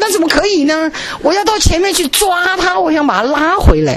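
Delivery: high, rushing, alarmed protesting voice.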